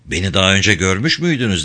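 plain

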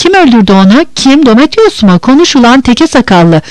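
plain

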